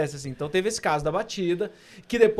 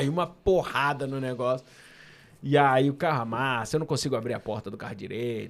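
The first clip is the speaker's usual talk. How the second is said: usual speaking voice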